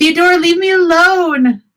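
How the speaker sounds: shrill, very high scream. The narrator voices a villager trying to fight off an attacker, screaming. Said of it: "just screaming like".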